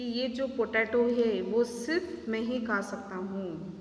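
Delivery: plain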